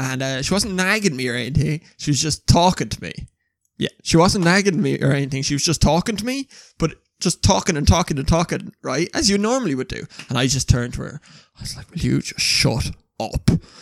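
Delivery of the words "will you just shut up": mock utterly serious, slow, no joking. Retelling what was said to someone who kept talking: imitating own dead-serious tone. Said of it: "Like, pure serious".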